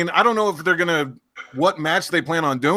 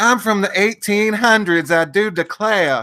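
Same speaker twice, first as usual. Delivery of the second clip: higher-pitched put-on Southern belle accent; 3 semitones higher than usual. A speaker mocks someone's whole Southern Belle thing: mock Lacey Evans Southern belle. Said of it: "The whole Southern Belle thing".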